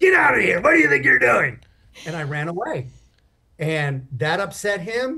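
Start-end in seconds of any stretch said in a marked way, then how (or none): 0.0-1.6 mock, loud, rough, furious snarl. Retelling how a clown chased him off outside the tent: imitating a furious snarl. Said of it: "he is snarling, mask of fury".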